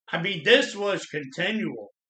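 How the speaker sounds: ordinary talk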